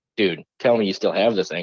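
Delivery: ordinary delivery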